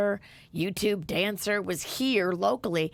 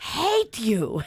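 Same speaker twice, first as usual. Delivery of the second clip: mocking, said really loud and openly; 5 dB louder than usual. Retelling how a stranger loudly said it in line: imitating a loud voice. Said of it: "he said it really loud".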